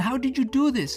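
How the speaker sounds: crazed, very high, loud excited shriek. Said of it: "She screamed like she was crazy".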